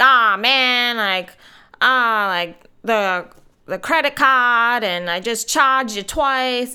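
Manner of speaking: put-on loud, thick Boston accent. Retelling what a guy said after charging them twice, thick boston accent. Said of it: "in this really thick, like, Bostonian accent".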